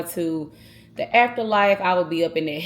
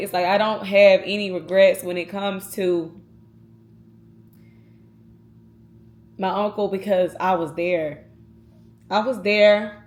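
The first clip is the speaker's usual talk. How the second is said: welling up with feeling, emotional, with swinging pitch. Speaker telling listeners about an uncle who passed this year: emotional. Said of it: "I'm sorry I'm getting emotional".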